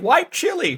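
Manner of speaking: mock shouting. Imagining corn in masks shouting a slogan: mock shouting. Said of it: "corn in Klan masks shouting".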